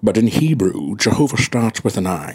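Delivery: low, slow put-on Scottish accent. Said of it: "I'm doing Sean Connery from all walks of life".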